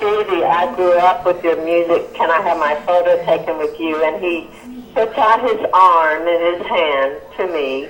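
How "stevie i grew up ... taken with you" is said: normal talking voice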